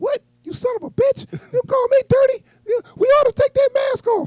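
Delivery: squeaked out high and loud. Retelling a Batman scene, the speaker voices the accused cop in a Mickey Mouse voice. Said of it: "He talked just like Mickey Mouse".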